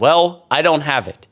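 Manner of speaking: usual speaking voice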